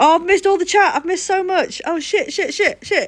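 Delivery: very high-pitched, thrilled, excited outburst. Catching up on missed chat after a first raid, excited. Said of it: "I'm really excited now".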